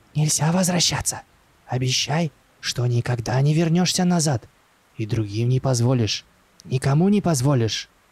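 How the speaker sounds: sudden, rapid, hurried whisper. The old man turns to Max and whispers right in his face: sudden fast whisper. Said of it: "неожиданно быстро зашептал ему прямо в лицо".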